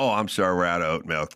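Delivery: heartbroken, mournful, sorrowful voice. Acting a barista out of oat milk: mock sorrowful barista. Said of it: "I feel emotionally d-, tattered now".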